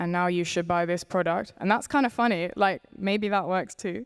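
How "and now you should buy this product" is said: acted deadpan, flat, monotone ad-style read. Imitating a podcaster doing an ad read: Emma Chamberlain monotone ad read. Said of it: "in such a monotone voice".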